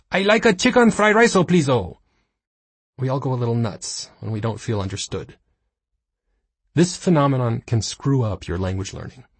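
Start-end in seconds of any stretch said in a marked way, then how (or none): 0.1-1.9 over-the-top exaggerated Spanish accent, very high pitch. Speaker imitates their father ordering Chinese food, exaggerated Spanish accent. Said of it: "develops an exaggerated Spanish accent".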